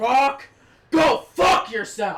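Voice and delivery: drawn-out, furious, loud, very slow angry shout. Retelling a wrestler's reply in the ring: loud angry retort. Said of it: "And he says it loud".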